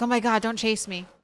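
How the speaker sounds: put-on stressed-out cat voice. Voicing a cat that gets chased in hide and seek: voicing a stressed cat. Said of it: "she looks stressed".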